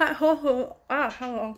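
slow, muffled speech as if through new dentures. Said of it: "Can't talk in them yet".

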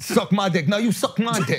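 put-on Brooklyn New York woman's accent. Friends joking about how New York women talk, New York female accent. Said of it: "the New York female accent".

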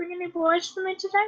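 high-pitched comic mob boss voice, creepy. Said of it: "You sound like one of those comic mob bosses".

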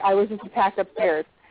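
normal talking voice

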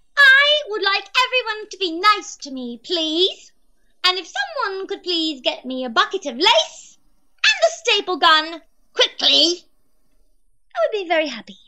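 high-pitched cartoon character voice. Answering a question from Pink Pearl Apple, doing the Nightmare Rarity voice. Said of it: "Will you be able to do a voice of Nightmare Rarity?".

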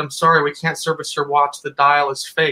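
normal talking voice

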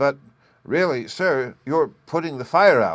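halting, hesitating. Gluck addresses his guest, the old gentleman, hesitatingly. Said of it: "said Gluck hesitatingly".

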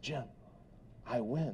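very hushed, close-up whispered aside. Retelling how a banker leaned in and whispered: imitating a banker whispering. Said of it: "He leans in again and he whispers".

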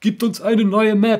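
mock high, slow, whiny voice.

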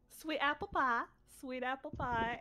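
put-on American southern accent. Trying the suggested phrase exercise, saying it in a southern accent. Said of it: "Say sweet apple pie in a southern accent".

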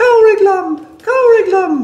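very high, distressed damsel-in-distress cry. Giving an actor an action, the speaker demonstrates the line as a damsel in distress. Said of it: "and you are a damsel in distress".

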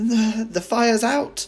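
high, proud tone. Speaking to Grandma after the fire, announcing proudly. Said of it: "George announced proudly".

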